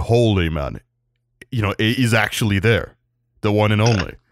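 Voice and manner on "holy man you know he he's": ordinary delivery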